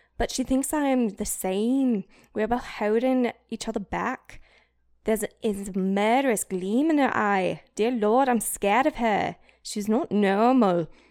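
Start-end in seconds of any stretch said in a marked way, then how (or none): 7.8-9.4 put-on speaking with British accent. Performing a line from a scene in a British accent. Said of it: "I did it in a British accent".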